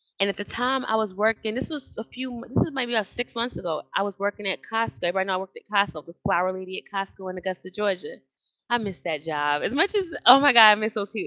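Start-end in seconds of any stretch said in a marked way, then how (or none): 8.7-11.3 voice catching, choked-up, close to tears. Remembering a missed job and coworkers, close to tears. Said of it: "I'm not gonna cry".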